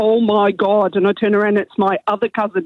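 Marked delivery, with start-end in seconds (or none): 0.0-0.9 put-on really thick, broad Northern Irish Derry accent. Acting out a cousin from Northern Ireland coming out of the toilet, in a really thick Derry accent. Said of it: "in a really thick Derry accent".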